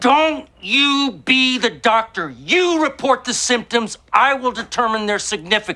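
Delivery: high, impassioned, passionate shouting. Ordering someone to report symptoms and not play doctor: yelling. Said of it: "I am yelling".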